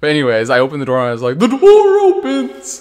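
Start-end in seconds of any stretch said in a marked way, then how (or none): 1.4-2.8 high, loud, squeaky cartoon voice. Retelling opening a door and quoting the character: Patrick Star voice. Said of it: "He does sound like Patrick Star from SpongeBob".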